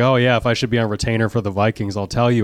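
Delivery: ordinary talk, nothing marked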